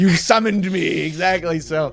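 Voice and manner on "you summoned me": high put-on demon voice. Acting out a demon floating out of a green screen: put-on demon voice. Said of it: "float out of it like a demon".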